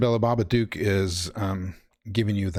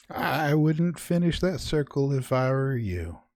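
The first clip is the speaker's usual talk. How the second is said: put-on old lady voice, much higher; 6 semitones higher than usual. Narrating a scene, a voice speaks from behind the listener: little old lady voice. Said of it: "you hear a voice from behind you of a little old lady".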